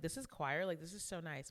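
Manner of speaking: ordinary delivery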